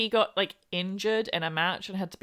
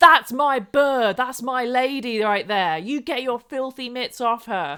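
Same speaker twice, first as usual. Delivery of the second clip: put-on, very loud enraged yell; 4 semitones higher, 8 dB louder than usual. Retelling a prank where a big lad storms in: imitating a furious man. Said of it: "And he would be furious".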